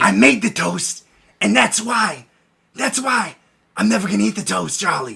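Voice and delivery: put-on near-whisper. Doing an impression while a friend coaches, speaker performs imitating an almost-whisper. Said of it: "He's almost whispering".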